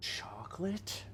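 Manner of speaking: whispered, breathy cartoon-guy voice. Unsure how to say a word, saying it like the SpongeBob chocolate guy. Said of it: "Say like the one guy from SpongeBob".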